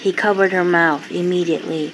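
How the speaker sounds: ordinary delivery, nothing marked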